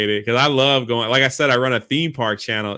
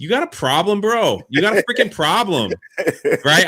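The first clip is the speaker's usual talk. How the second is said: play-acted, confrontational yelling; 6 semitones higher than usual. Retelling turning on a man who followed them, the speaker reenacts yelling at him. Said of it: "I'm yelling".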